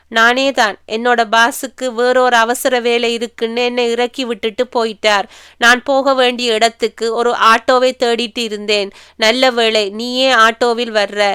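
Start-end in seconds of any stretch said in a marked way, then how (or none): none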